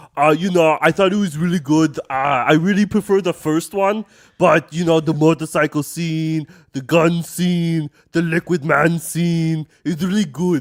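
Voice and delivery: loud put-on Austrian accent. Answering a question about working on Terminator 2, Arnold Schwarzenegger impression. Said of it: "I was doing the Arnold Schwarzenegger impersonation".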